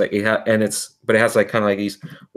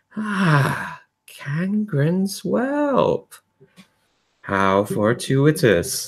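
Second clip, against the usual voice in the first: smooth, unhurried, silky voice, slow and high; 7 semitones higher than usual. Voicing a mech pilot greeting a player: silky voice. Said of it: "this silky voice going".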